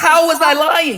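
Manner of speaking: heated, insistent, pressing, confrontational tone. Demanding an answer from another speaker in an argument: yelling. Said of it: "Stop yelling".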